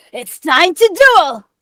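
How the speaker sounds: very high, very loud anime hero-style cry. Asked by the other speaker to use their most anime voice possible. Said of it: "use your most anime voice".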